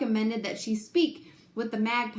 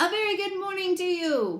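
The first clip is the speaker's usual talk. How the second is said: booming friendly robot voice, pitched up, bright; 7 semitones higher than usual. Roz the robot greets an old gray goose across the pond: booming friendly Roz robot voice. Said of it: "the friendly robot's voice boomed over the water".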